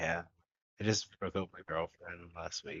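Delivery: very quiet, crestfallen, sad delivery. Retelling what a kid said after going quiet: imitating someone quiet and sad. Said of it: "really quiet and really sad".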